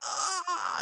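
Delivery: high, soft, panicked cry with a gasp.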